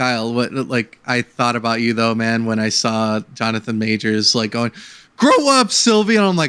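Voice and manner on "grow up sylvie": acted, shrill, furious, very high raging shout. Retelling a line from the show: imitating Jonathan Majors' raging line. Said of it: "had rage in him".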